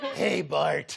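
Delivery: crusty, rasped-out clown voice. Losing their voice, describing what they do back at the office: Krusty the Clown impression. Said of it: "do crusty".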